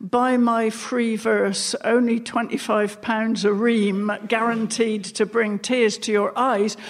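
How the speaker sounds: normal talking voice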